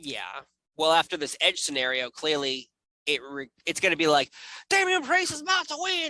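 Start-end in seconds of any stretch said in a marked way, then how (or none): 4.7-6.1 put-on Southern drawl, higher pitch. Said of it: "I don't know why they have Southern accents".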